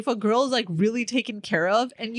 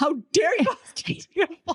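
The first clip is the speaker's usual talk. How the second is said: mock, outraged, indignant scolding tone, pitched up; 5 semitones higher than usual. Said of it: "My mom was like".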